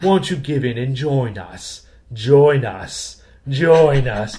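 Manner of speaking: eerie, slow, put-on spooky voice. Addressing Carrie at the end of a bit: spooky voice. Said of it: "That's the end of my spooky voice there".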